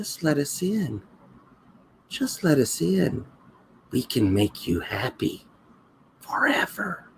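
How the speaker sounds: tiny, soft, minuscule little voice. Narrating a fly crawling on the listener's cheek, speaking in a tiny little voice. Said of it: "you hear this tiny little voice".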